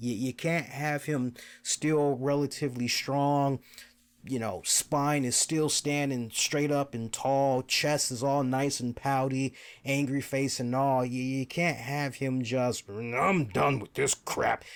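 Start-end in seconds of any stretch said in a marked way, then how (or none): 12.9-14.6 gravelly creaky voice. Acting out a wrestler walking away from the fight: Braun Strowman voice. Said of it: "I made him sound like Braun Strowman".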